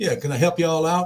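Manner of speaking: put-on laid-on Southern American accent. Retelling a woman at a Mississippi hotel greeting them, the speaker does a Southern accent. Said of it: "speak with a Southern accent".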